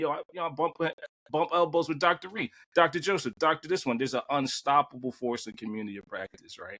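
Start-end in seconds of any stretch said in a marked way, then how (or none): none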